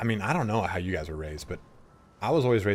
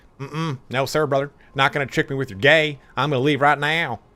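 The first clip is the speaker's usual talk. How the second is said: put-on dismissive voice, much higher, louder; 6 semitones higher, 5 dB louder than usual. A streamer acts out a viewer leaving the stream, imitating a close-minded stream viewer. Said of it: "I think we all know where I took that voice from".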